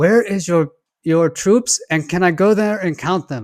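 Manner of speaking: terrible put-on Middle Eastern accent. Recalling a Saturday Night Live sketch, quoting the reporter in a terrible Middle Eastern accent. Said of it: "in like a terrible Middle Eastern accent".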